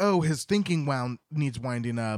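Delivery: ordinary delivery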